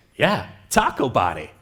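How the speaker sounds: put-on low, dead serious deadpan delivery. Retelling a child's reply to a question about a lyric: imitating a deadpan reply. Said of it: "he looked at me deadpan back and said".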